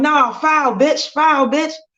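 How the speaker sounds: put-on heated, sore childlike protest. Retelling an argument after a dunk, imitating Jeffrey mad. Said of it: "he mad, he mad".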